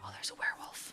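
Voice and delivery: hushed, whispering voice. Spotting a werewolf while playing, another speaker asks why: whispering. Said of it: "Why are you whispering?".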